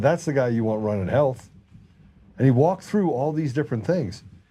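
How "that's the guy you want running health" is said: normal talking voice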